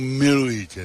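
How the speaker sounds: acted, staged, theatrical, dramatic delivery. Man after a quarrel with his girlfriend, retelling his plan to kneel; theatrical declaration. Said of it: "takhle teatrálně".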